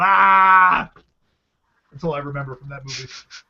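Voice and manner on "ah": loud mock yell. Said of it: "put my gun in the air and yelled".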